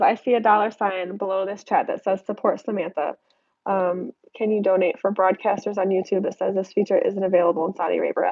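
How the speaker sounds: ordinary delivery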